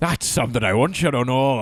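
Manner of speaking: mock Irish pirate accent. Repeating a man's quoted compliment back to the co-host, mock Irish pirate accent. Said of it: "I don't know what that was like pirate".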